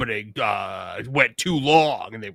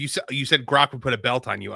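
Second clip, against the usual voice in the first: ordinary delivery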